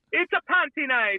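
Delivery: very high, squeaky, wonky Irish accent. Trying a McGregor impression after saying it comes out wrong: Conor McGregor impression. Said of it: "I can't do a McGregor, uh, impression".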